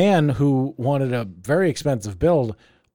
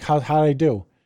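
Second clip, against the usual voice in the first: ordinary talk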